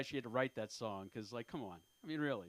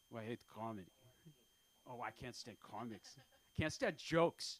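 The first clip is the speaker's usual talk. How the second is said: put-on heavy, thick, laid-on Ukrainian accent; 3 semitones lower than usual. Retelling a woman's reply on hearing about stand-up plans, thick Ukrainian accent. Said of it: "like with a thick Ukrainian accent".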